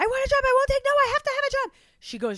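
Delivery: very loud, very high, insistent shouting. Recounting a film scene where she yelled at Yubaba for a job, retelling a yell. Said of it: "the same way she yelled at Yubaba for the job".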